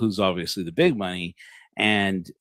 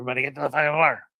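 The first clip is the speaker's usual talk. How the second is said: mock urgent police-style voice, pitch rising; 6 semitones higher than usual. Retelling how police stormed in and screamed at everyone: imitating police screaming. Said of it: "as they start screaming".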